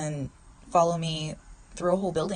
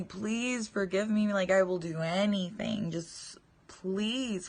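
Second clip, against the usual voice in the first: reenacted desperate begging; 3 semitones higher than usual. Speaker recalls answering a man who asked if she was okay, retelling desperate begging. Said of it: "I'm just begging for forgiveness".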